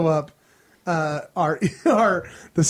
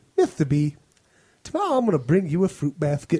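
put-on lisping child voice, lower; 4 semitones lower than usual. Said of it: "'cause he's got a lisp".

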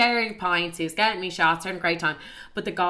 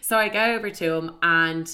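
ordinary talk

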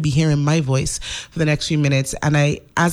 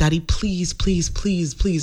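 put-on, pleading, begging teen voice. Retelling how she begged her dad in 10th grade: retelling begging her dad. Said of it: "I begged my dad".

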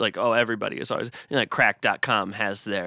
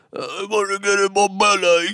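very high, loud, comic big fat guy voice; 10 semitones higher, 6 dB louder than usual. Quoting a movie character, the big old fat guy: imitating the big fat guy. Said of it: "the big old fat guy, he goes".

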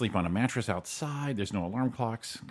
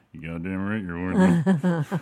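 imitated muttering under the breath; 7 dB louder than usual. Retelling what a dad said about a commercial: imitating muttering under breath. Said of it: "said under his breath".

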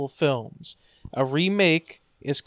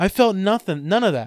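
ordinary delivery

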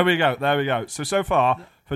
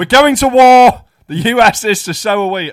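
very loud, high-pitched rallying bellow; 7 semitones higher, 10 dB louder than usual. Playing a big-eared mongoose standing over Ducky McDuck, Tony Blair-like mongoose voice. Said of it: "like a Tony Blair figure".

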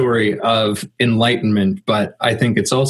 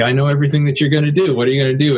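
put-on mocking, taunting tone, faster; 4 semitones higher than usual. Telling a story, the speaker voices the deer taunting the woodcutter: acting out the deer's mocking. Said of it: "And is mocking him this whole time".

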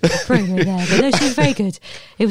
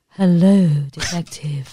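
classic film noir femme fatale vamp voice. Answering a question about a femme fatale audition: film noir femme fatale voice. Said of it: "a femme fatale in, like, a, uh, in, like, a noir movie".

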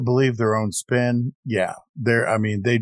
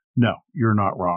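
ordinary talk, nothing marked

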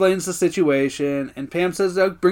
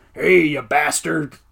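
put-on Old West frontier gunslinger cowboy voice; 3 semitones lower than usual. Retelling a scene where two characters start doing old west voices: old west voice. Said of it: "Old West voices".

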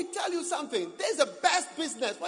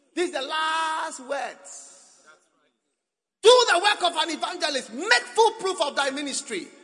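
loud put-on croaking voice, final word drawn out; 4 semitones higher, 6 dB louder than usual. Speaker acts out the last words from the scripture passage, croaky voice. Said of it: "This is the croaky voice".

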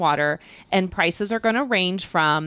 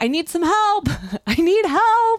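play-acted, very high-pitched yelling; 11 semitones higher, 3 dB louder than usual. Retelling how balloon pilots called out to campers: imitating pilots yelling for help. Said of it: "yelling out".

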